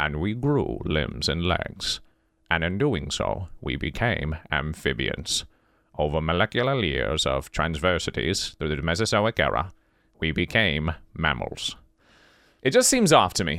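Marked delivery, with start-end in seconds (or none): 0.0-11.7 put-on documentary narrator voice, lower. Retelling the beginning of existence as a podcast intro, doing a Morgan Freeman voice. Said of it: "I'll do my Morgan Freeman".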